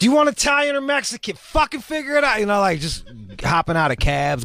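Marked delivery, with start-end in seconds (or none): 0.0-2.4 yelling, higher pitch. Retelling his own past words to his ex: imitating himself yelling.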